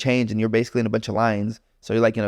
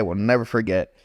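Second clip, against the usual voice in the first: plain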